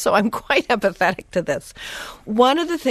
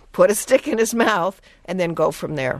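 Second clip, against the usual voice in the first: ordinary talk, nothing marked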